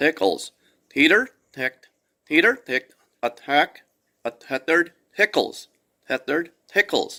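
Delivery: speaking with lips held still. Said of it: "I have to kind of semi-cheat".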